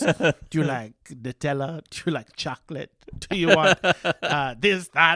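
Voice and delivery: put-on Spanish accent. Recounting Jeremy offering ice cream toppings, imitating Jeremy's Spanish accent. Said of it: "with that voice and that accent".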